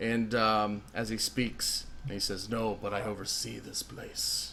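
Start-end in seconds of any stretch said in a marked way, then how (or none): 2.5-4.5 dark, very deep, demon-like voice. Voicing a werewolf-like overseer answering a player: dark, deep, demonic-like voice. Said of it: "He sounds very dark and, ... very deep, ... demonic-like".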